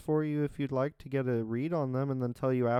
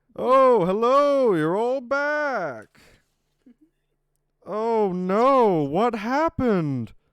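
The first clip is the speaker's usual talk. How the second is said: bad put-on voice, booming, drawn-out, high, slow; 8 semitones higher, 10 dB louder than usual. Voicing Chancellor Pope greeting the returning players: bad Markiplier impression. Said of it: "my bad Markiplier impression".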